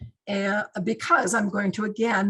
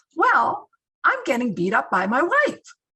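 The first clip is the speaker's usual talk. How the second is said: jokey, playful, bouncy voice, pitched up; 5 semitones higher, 4 dB louder than usual. Retelling a crisis-line caller's answer: imitating a caller's fun voice. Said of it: "in that same fun voice".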